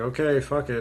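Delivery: ordinary delivery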